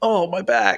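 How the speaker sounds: mock whiny, complaining moan, high-pitched.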